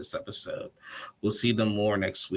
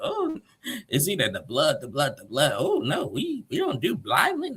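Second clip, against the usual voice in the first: animated, high, swooping sing-song way of talking; 7 semitones higher than usual. Retelling a cast member's reaction to a hand banged on a table: imitating Ace's way of talking. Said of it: "I don't know why she always talks like that".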